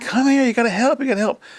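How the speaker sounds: very high, shrill hollered yell. Retelling how someone yelled for help: imitating someone yelling. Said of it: "yelling at me".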